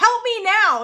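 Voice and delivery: shrill, high, loud yell. Retelling how May yells at the twins: imitating someone yelling. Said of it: "just yells at these twins and she's like".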